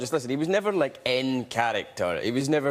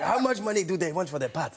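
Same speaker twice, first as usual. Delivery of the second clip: high-pitched, bad Ugandan accent. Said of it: "The worst Ugandan accent you've ever heard".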